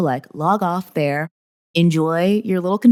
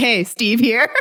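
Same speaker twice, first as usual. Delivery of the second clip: put-on Midwestern dad voice, higher pitch; 5 semitones higher than usual. Retelling introducing oneself in an Instagram story: imitating a Midwestern dad. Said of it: "like a Midwestern dad".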